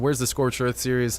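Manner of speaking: plain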